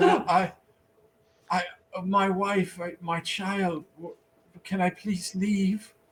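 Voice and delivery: scared, slow, halting, stammering frightened pleading. Voicing a freed prisoner who begs to leave: frightened prisoner pleading. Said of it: "so he looks at you and he says".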